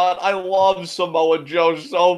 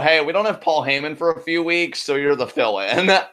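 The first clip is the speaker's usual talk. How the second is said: plain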